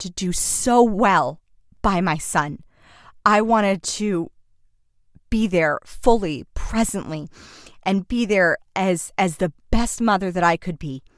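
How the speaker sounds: tearful, choked-up voice, tearing up mid-sentence. Talking to listening moms about becoming a mother, tearing up. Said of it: "I'm I'm tearing up right now".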